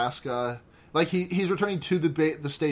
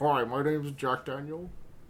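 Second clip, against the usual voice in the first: put-on buttery talking-whiskey voice; 4 dB quieter than usual. Introducing Jack Daniel as a guest on the show: Jack Daniel voice like after eating butter. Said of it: "I sound like I just ate a stick of butter".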